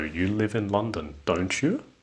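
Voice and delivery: don't you said with the pitch rising at the end. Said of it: "it is going up".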